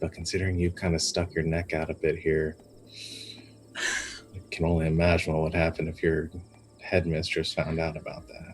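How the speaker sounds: soft, hushed, secretive stage whisper. Leaning in to threaten a character in a game scene: half-whispering. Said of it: "trying to whisper as much as possible".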